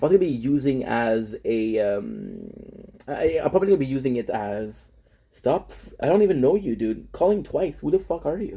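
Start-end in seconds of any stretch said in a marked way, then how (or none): 5.3-8.6 irritated, fed-up, angry, upset outburst. Speaker reacts to a stranger calling twice, upset. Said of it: "I'm getting upset".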